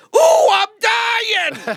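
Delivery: frazzled, very high, swooping, unglued voice. Showing the moment the cartoon rabbit goes off the rails: frazzled Bugs Bunny voice. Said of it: "it goes from Bugs Bunny sounding like this to".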